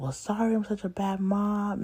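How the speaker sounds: acted-out high, tearful, weepy crying. Retelling what the mother said during an argument: imitating someone crying. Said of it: "she was crying and saying".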